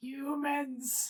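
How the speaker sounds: really disturbing, creepy put-on voice. Retelling what he started saying at the speaker's window, in a really disturbing voice. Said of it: "in a really disturbing voice, and he's he started just sitting at my window and going".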